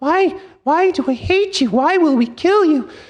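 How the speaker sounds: very high, squeaky, chittering chipmunk voice. Narrating chipmunks calling down to the listener, in a high-pitched chipmunk voice. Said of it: "calling down to you with high-pitched voices".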